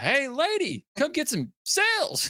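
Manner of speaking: very high, very slow, swooping, drawn-out sing-song yell. Imitating a game cat yelling at pedestrians, Alan Tudyk yelling. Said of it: "like Alan Tudyk's when he's like".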